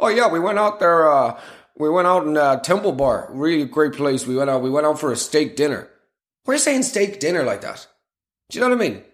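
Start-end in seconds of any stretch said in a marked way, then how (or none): 0.0-5.9 put-on American accent with a chatty delivery. Mocking how americans talk about going out: imitating an american. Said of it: "when Americans say stuff like".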